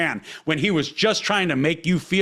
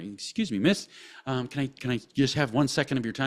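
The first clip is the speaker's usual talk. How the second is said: put-on very polite voice, lower and quieter; 3 semitones lower, 6 dB quieter than usual. Retelling a video where a man approaches a woman: imitating someone super polite. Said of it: "and he's super polite".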